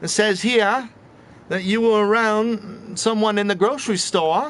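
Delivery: clumsy, overdone Aussie twang. Playing a COVID tracer at your door in Australia, bad Australian accent. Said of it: "That's my worst Australian accent ever".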